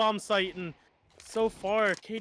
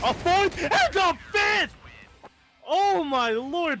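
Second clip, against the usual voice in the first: excited, high, drawn-out voice crack; 10 semitones higher, 5 dB louder than usual. Casting a match as katie gets all five in the round, voice cracking. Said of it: "pardon my voice crack".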